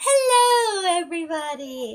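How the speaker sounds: high, bright, cheery hostess voice, long drawn-out hello. Acting out an airline hostess greeting everybody: mock-cheerful hostess greeting. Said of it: "airline hostess kind of like reaction where they're smiling like".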